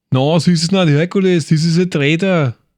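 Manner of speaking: put-on Austrian accent.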